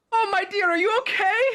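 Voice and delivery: sweet, loving motherly shriek, very high-pitched. Voicing a character who calls out to a stumbling bard: sweet loving motherly voice screaming. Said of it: "sweet, kind, loving, motherly voice scream".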